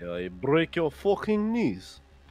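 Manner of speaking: put-on Russian accent. Asked in a group bit whether they are Russian, answering in an attempted Russian accent. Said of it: "But I am Russian".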